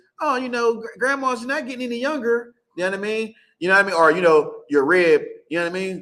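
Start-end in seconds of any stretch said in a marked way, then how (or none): 0.2-2.5 put-on sweet old-lady voice, high and slow. Acting out a grandma's attempts on you, putting on a sweet grandma voice. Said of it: "putting on the sweet grandma voice".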